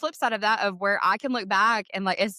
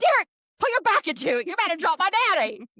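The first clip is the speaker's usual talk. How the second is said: put-on yell, pitched higher; 10 semitones higher than usual. Retelling a sister yelling at her husband at the casket: imitating Christy yelling. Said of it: "she's yelling at her husband".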